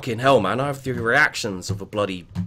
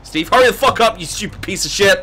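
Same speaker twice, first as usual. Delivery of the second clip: frustrated angry shouting, higher and louder; 8 semitones higher, 6 dB louder than usual. Playing a game while under attack, yelling at a teammate: stressed angry yelling. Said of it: "I'm just a little stressed".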